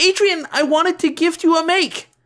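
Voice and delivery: anxious, flustered, nervous, very high. A narrator voices a girl speaking to a classmate: nervous. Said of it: "Marinette nervously said".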